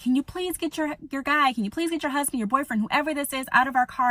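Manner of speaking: put-on yelling. Retelling what a woman in the car yelled during a fight: imitating someone yelling. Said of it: "the woman's yelling at me".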